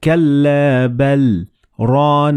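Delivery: very slow, with brief pause after كلا. Reading example for this sign: very short pause after كلا, then continue reading. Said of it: "you should read it like that. So it is a very short pause".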